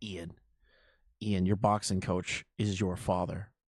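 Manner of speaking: very low, deep, possessed demon voice. Imagining Jensen going up to a boxer in his corner, demonic voice. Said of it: "this fucking demonic voice".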